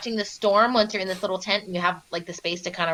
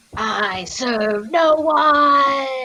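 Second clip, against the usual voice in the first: very slow, horrible, booming echoing voice; 4 semitones higher, 5 dB louder than usual. Playing a giant in a tabletop game, horrible echoing voice. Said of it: "It's this horrible, like, echoing voice".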